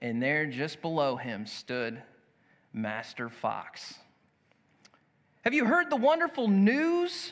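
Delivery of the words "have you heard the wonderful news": very high, fast, gleeful, excited cry. Master Fox calls up to the rooster from below, joyful and excited. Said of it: "cried the fox in a very joyful and excited manner".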